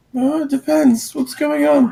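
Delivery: put-on high nervous boy voice.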